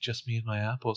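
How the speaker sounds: mock calm delivery. Describing a creepy moment in the kitchen, retelling a woman's line, imitating a calm delivery. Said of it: "she's very calm".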